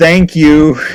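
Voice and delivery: very loud, high, blurted shout. Retelling being elbowed getting off a train: imitating own yell. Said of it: "I just yelled".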